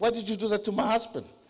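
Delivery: play-acted, high-pitched, shrieking accusing tone. Retelling what a rescued woman screamed about her husband: imitating someone screaming. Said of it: "she started screaming at me".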